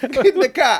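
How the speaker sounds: put-on, shrill, loud, high-pitched shouted Boston accent. Joking about an american actor in the movie: boston accent. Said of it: "Boston accent".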